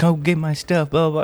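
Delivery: angry, raging, high rant. Retelling what a solo teammate said after dying, imitating a raging player. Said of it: "he just kept raging and raging".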